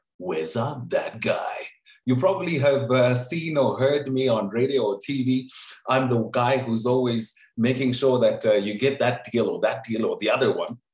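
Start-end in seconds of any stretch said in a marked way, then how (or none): 0.2-1.6 grand, dramatic epic announcer voice. Speaker shows how his name must always be said, epic voice. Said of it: "you have to use the voice. It must be epic".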